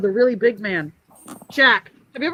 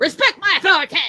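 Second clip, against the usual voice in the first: very high-pitched cartoonish voice; 10 semitones higher, 4 dB louder than usual. Wondering what it would sound like as Cartman: Cartman voice. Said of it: "What if it sounded like Cartman?".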